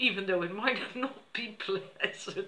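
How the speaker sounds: laughing right through the words. Explaining that it's for a good cause though unpleasant, laughing while talking. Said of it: "I'm sorry I'm laughing".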